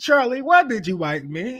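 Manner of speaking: very high, fake put-on British accent. Retelling what a man said after he got a British accent, doing a put-on British accent. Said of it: "so he got this British accent".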